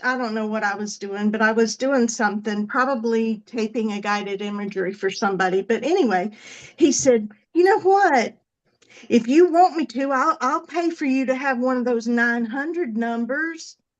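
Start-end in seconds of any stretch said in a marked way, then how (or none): 7.5-13.7 put-on Alabama southern accent. Retelling what the speaker's dad said on overhearing a recording, in dad's Alabama accent. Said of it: "I'm putting on my dad's Alabama accent".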